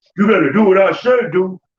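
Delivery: loud, hard, harsh, condescending scolding tone. Imitating people switching voice toward their kids: mock harsh scolding. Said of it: "they code switch instantly and get that voice".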